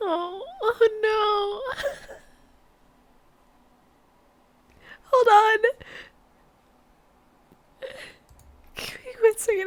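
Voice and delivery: starting to cry. On camera, about to step away to cry it out, starting to cry. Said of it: "I'm just gonna cry it out".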